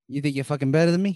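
put-on Boston accent. Quoting a Boogie Nights scene, Mark Wahlberg Boston accent. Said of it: "If I'm gonna do a Boston accent".

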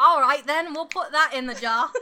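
bellowed in a dodgy, Cockney-ish accent. Responding to a player's point donation, in an unclear Cockney-ish accent. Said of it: "I don't know what this accent is".

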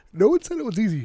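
talking through a yawn. Mid-conversation, yawning into the microphone. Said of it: "as you fucking yawn into the microphone".

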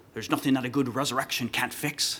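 put-on French-Canadian accent. Quoting what a man would say, in his French-Canadian accent. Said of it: "he would say in his French-Canadian accent".

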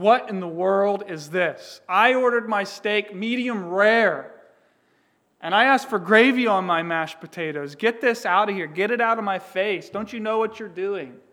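furious, very loud angry yelling. Describing an imagined dinner out, the speaker acts out yelling at the waitress: retelling an angry yell. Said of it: "me yelling".

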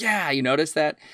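a touch of eager excitement. Acting out a character's reply in a play discussion: acting out a bit of excitement. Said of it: "you can almost hear a little bit of excitement".

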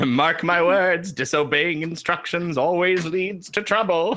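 high-pitched, preachy yelling like a preacher. Discussing a story with co-hosts, quoting the character Demetro: retelling Demetro yelling the moral. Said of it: "he sort of yells out the moral of the story".

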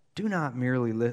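soft, gentle voice. Reading a rough Bible verse aloud to the group, use a soft voice. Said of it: "I'll read it in a soft voice".

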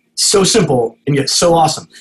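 ordinary talk

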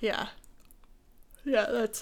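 words pulled long by a yawn. Mid-conversation, trailing off while answering: yawning. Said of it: "sorry, yawning".

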